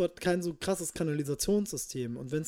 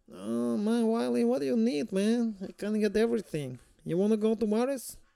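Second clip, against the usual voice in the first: put-on Mexican accent, pitched up; 6 semitones higher than usual. Retelling how people offering a fistful of grass talked, imitating Mexican accent. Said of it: "So haben die halt mhm".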